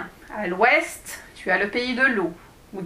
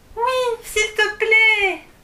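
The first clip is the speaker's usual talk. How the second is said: very high, shrill, piercing cry; 10 semitones higher, 3 dB louder than usual. Reading a story, a character answers the dwarf: high-pitched cry. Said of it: "cria Alice d'une voix aiguë".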